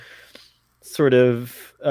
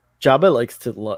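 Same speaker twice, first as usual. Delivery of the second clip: ordinary talk, nothing marked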